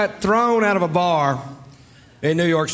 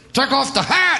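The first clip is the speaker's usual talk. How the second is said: touchy, indignant, irritated, high-pitched delivery; 8 semitones higher than usual. Retelling a guy snapping at him about a hat, imitating a pissy guy. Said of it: "This guy real pissy goes".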